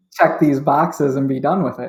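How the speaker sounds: plain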